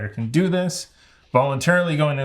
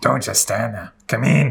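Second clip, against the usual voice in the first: raspy, rough, scratchy, creaky voice; 2 semitones lower than usual. Reading a game card aloud, a hunched woman beckons you inside: scratchy voice. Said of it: "a scratchy voice beckoned".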